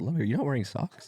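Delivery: put-on whisper. Retelling own words at dinner: imitating own whisper. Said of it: "I whispered it".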